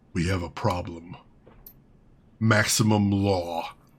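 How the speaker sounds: deep, very low, soft, slow rumbling bass. Narrator voicing Bao, who acknowledges you with a nod, rumbling bass voice. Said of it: "His rumbling bass voice".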